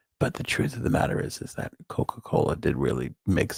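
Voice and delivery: hushed, breathy, barely voiced whisper. Speaker worries the kids may still be awake, whispering. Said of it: "I have to whisper this".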